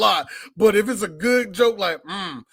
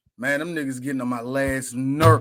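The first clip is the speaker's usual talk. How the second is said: whole voice suddenly drops deep and low; 7 semitones lower than usual. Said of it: "Michael's whole voice drops".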